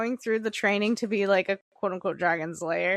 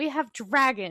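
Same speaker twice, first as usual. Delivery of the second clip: mock-proud, excited bragging tone; 3 semitones higher than usual. Complaining how he closes with the same line, mimicking an excited boast. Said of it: "they're so fucking cool type".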